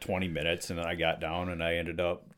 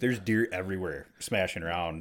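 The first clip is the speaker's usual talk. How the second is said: ordinary delivery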